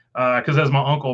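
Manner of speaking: ordinary delivery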